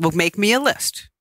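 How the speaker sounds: ordinary talk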